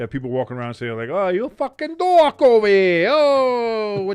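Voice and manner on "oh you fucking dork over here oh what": bad mixed Italian-British accent, loud and slow. Imitating people walking around in the fifties: put-on mixed Italian-British accent. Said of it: "I don't know why I mixed Italian and British".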